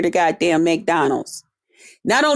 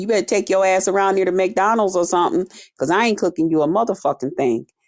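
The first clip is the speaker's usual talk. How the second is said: ordinary delivery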